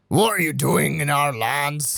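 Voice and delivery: put-on thick Scottish barbarian accent. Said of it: "in a really thick Scottish barbarian accent".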